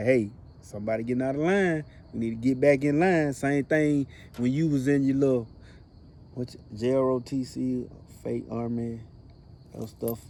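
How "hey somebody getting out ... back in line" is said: normal talking voice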